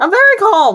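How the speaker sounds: very high, frantic, flustered insistent voice. Voicing a character told to calm down: insisting on being calm while flustered. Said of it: "No, you are not".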